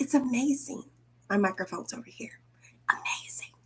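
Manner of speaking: soft whisper with barely any voice. Speaker addressing listeners, whispering. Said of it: "I'm whispering".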